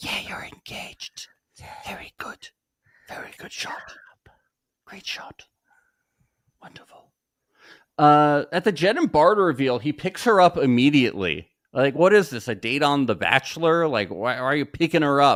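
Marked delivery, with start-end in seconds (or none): 0.0-7.1 very quiet, hushed, polite whisper. Retelling how the women's chorus reacted to an engagement: imitating people whispering. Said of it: "so they all whisper and golf clap".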